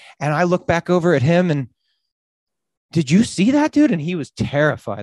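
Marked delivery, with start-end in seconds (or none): 2.9-3.9 mock eager, all-excited, pitched-up voice. Retelling asking a friend about a flash: retelling own excited words. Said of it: "I was all excited".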